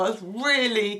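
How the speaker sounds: ordinary delivery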